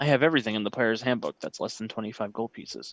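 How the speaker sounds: matter-of-fact, dead straight, deadpan delivery. A game master voices a merchant telling players what he sells, deadpan. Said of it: "just deadpan voice".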